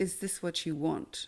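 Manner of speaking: very gentle, soft, very calm and clear voice. Retelling a voice heard in a dream: gentle, calm voice. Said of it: "this voice speaks into my ear very gently and very, very calmly".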